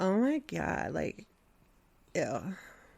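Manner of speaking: put-on drawn-out, creaky, vocal-fry valley girl drawl. Picturing a jury of Valley girls, doing their vocal-fry Valley girl voice. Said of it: "Vocal Fry Valley girls".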